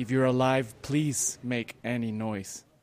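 ordinary delivery

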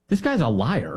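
ordinary talk, nothing marked

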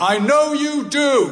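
loud, very high voice. Leaving the hospital ward, the speaker retells his dad calling after him, loud voice. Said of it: "in a loud voice".

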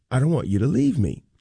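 ordinary talk

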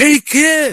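acted male yelling. Speaker recalling a man calling to him as a kid on the green: retelling a louder yell. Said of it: "He yells louder".

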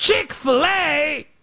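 high, slow, bad British accent. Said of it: "My accents are awful".

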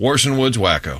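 ordinary talk, nothing marked

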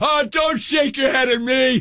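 mock, very high, shrill yell. Acting out yelling from inside a closed car at a woman who shook her head, retelling a yell. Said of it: "yelled at her".

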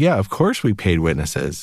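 plain

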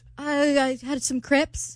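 very bad fake British accent attempt. Answering a question about breakfast, speaker replies: bad British accent. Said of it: "Y'all tied for the worst British accent".

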